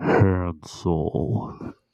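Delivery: deep, low, comic announcer-style voice. Doing an impression of a movie line: Will Ferrell impression. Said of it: "I'm gonna do my, my best, like, impression".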